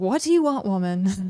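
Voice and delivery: acted voice full of sass and attitude. Voicing Del replying to the speaker, in a sassy Del voice. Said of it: "I gave Del sassy voice".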